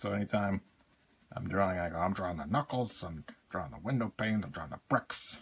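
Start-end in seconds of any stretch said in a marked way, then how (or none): 2.0-5.4 animated narration swooping up and down through each phrase. Showing what gets said while drawing: Todd McFarlane impression. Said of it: "that's our Todd McFarlane impression".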